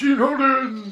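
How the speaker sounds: slow, stretched-out creepy villain drawl. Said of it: "Why am I talking so creepy? I'm Bane".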